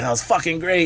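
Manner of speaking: mock thrilled excitement. Retelling a co-star's reaction after the director called cut: acting out excitement. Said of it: "He's so excited about it".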